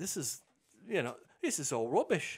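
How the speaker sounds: put-on, drifting Australian accent. Retelling how the man reacted after reading what he was sent, imitating Adrian's accent. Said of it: "you got the accent".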